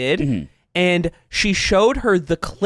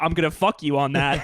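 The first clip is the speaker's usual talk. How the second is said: put-on threatening voice, quieter; 2 semitones lower, 4 dB quieter than usual. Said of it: "I say it threateningly".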